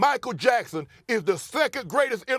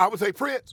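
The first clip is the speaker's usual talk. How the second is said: ordinary talk, nothing marked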